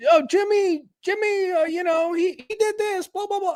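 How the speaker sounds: put-on very high, squeaky, annoying tattletale kid voice. Mocking a politician as the annoying class tattletale: imitating an annoying tattletale kid. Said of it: "he sounds like that annoying kid".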